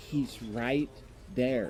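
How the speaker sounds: soft whisper, close, right at the ear. Retelling what a woman curled up beside the speaker whispered in their ear, retelling a whisper. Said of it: "she whispers in my ear".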